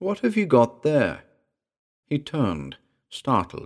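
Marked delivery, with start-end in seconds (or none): 0.0-1.2 calmly, without alarm. The narrator calls out to a youngster who hasn't noticed the approach: calm voice. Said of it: "I called to him in a calm voice".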